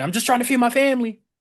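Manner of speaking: heated, angry rant. Retelling what a man in an interview kept saying, mock-angry. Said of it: "he just angrily said".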